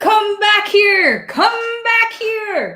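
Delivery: very high, shrill, loud screaming. Voicing a farmer still screaming after people: screaming as Farmer Krennic. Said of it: "Farmer Krennic is still screaming".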